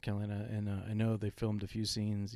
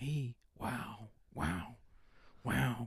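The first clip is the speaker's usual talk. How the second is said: very slow wows, each one stretched way out; 4 dB quieter than usual. Doing a quick impression line: Owen Wilson voice. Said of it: "sounding like Owen Wilson".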